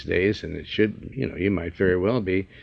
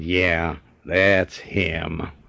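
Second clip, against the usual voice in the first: growling, growly voice; 2 semitones lower than usual. Retelling how a driver answered the man beside him, growling voice. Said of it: "like a growl in his voice".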